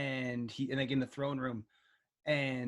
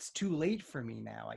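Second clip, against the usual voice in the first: mock, very sad voice; 2 semitones lower than usual. Describing a father confronted by his son, imitating a very sad father. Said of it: "he's just very sad and just like".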